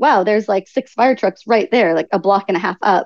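ordinary delivery

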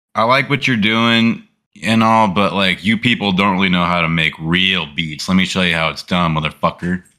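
ordinary delivery

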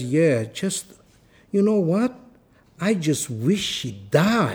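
put-on man's own accent, slow and swooping. Quoting a man's reply to the speaker's question, imitating his accent. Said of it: "I'll do the exact accent".

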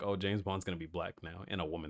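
ordinary delivery

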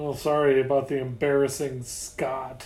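ordinary delivery

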